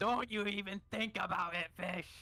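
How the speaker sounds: high, yelled out in a character voice. Yelling in character at a party member eyeing a coin purse: yelling in character.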